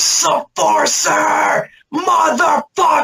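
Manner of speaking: very high, raspy, rough yell. Telling how the crowd got hyped, then imitating Bryce yelling. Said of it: "Bryce just yells".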